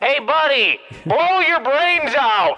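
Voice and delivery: very high, put-on bullhorn-style megaphone voice. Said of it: "that sounded like a megaphone".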